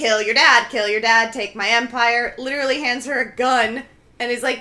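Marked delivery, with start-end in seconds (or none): 0.0-2.4 put-on intense insistent voice, louder. Retelling a plot scene where Roddy urges Shiloh: imitating an intense urging. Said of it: "Roddy is really intense and is like".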